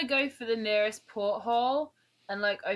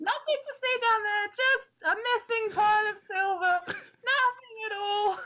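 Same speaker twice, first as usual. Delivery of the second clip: piercing, very high-pitched, shrill yell; 12 semitones higher than usual. Player as the rogue Bingo, running from sailors below decks: Bingo shouting. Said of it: "[name] - A mixedborn rogue tinkerer played by [name] / Bingo's like stood there like with his hands in the air like, / [name] - A mixedborn rogue tinkerer played by [name] / [name] - A mixedborn rogue t".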